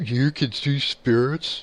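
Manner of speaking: condescending tone. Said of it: "like, condescendingly".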